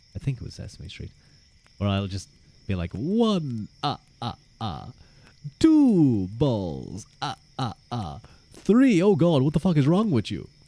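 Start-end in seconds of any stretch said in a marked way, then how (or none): 3.0-9.1 "one" stretched out, each "ah" swooping in pitch. Joking about doing a Sesame Street impression while counting aloud, the Count voice. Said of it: "Count Chocula or the Count".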